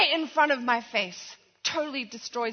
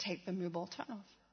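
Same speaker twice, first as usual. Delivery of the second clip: hushed, very gentle, low quick murmur; 6 semitones lower, 17 dB quieter than usual. A woman recalls what she heard on a drive after an argument, retelling a very gentle voice. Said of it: "But I hear this very gentle".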